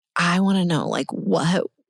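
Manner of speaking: usual speaking voice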